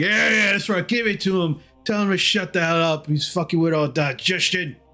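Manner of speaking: put-on slightly drunk character voice. Voicing a tipsy dragonborn cheering on a kick: tipsy dragonborn voice. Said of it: "you hear the dragonborn like".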